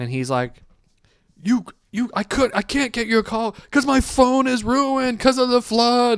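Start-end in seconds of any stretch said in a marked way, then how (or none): 1.4-6.2 imitated yelling voice, higher pitch. Retelling a downstairs neighbor's fight with the landlord: imitating a yelling neighbor. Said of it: "downstairs neighbor is yelling at my landlord".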